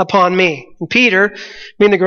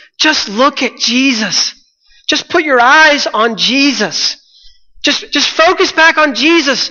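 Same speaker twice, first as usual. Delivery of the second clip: high, drawn-out, called-out urging voice; 5 semitones higher than usual. Imagining someone in the boat during the storm, the speaker acts out yelling. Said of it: "just yelling".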